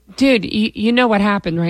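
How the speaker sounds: ordinary talk, nothing marked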